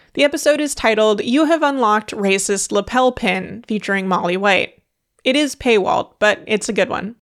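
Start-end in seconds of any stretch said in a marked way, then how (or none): none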